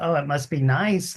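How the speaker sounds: ordinary delivery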